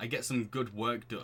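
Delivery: ordinary delivery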